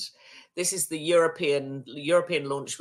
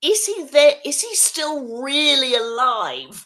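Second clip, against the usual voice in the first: put-on piercing, terribly loud, very high little-boy voice; 11 semitones higher, 8 dB louder than usual. Recounting what a little boy asked his mum, imitating his terribly loud voice. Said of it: "says in a terribly loud voice".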